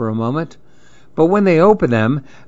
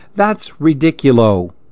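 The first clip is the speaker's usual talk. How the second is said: ordinary delivery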